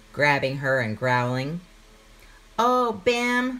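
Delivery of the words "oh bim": quick, high, squealing cry. Pim, grabbed by her big brother bim, squirms away, squealing. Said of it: "squealed Pim".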